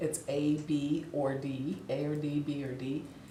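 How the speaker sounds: soft, hushed aside. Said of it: "I didn't say it out loud".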